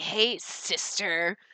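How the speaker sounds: fake obnoxious dude voice. Recalling how a guy always greeted people, douchey guy voice. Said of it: "he kind of had a douchey voice".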